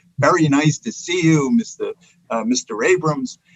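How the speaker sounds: put-on Milwaukee Midwest American accent. Recalling a prime minister greeting him, in a Midwestern Milwaukee accent. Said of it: "greeted me in a Midwestern Milwaukee accent".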